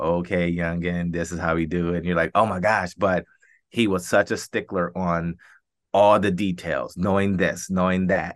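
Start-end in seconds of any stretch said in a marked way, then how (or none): 0.0-2.0 put-on flat monotone voice. Recalling his old coach in Buffalo, the speaker imitates the coach's monotone. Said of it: "he had a very monotone way of speaking".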